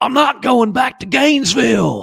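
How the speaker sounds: put-on awful, very high and very loud Southern accent. Quoting a line Keanu Reeves says, in the worst Southern accent. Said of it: "in the worst Southern accent perhaps of all time".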